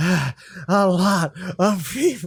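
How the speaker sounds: put-on, mock seductive, horny voice.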